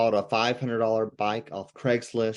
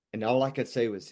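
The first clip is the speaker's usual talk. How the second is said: ordinary delivery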